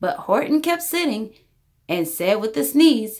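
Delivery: plain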